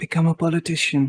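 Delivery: whispered voice. Giving him one piece of career advice, whispering in his ear. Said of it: "I'm gonna whisper in his ear".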